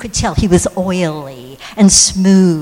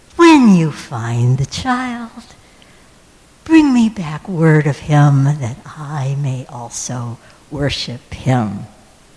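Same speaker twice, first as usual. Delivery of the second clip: put-on slick, oily, ingratiating tone. Storyteller retelling what Herod told the travellers; imitating Herod's oily, smarmy voice. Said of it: "in his oiliest, smarmiest voice".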